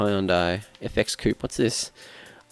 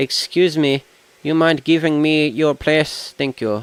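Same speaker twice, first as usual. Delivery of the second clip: odd put-on Indian accent, pitched up; 6 semitones higher, 4 dB louder than usual. Playing a racing game, speaking to another racer in a weird Indian accent. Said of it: "I can do a really weird accent".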